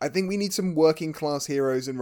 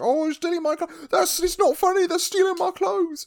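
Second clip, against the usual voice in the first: mock petulant childish whining, higher pitched; 3 dB louder than usual. Retelling a film character's complaint about stolen clothes: imitating a petulant child. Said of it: "he's very much a petulant child about it".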